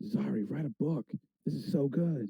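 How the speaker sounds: hushed, in-character whisper. Sneaking with the group and praising another character's story: whispering in character. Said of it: "I'm whispering that as my sneak".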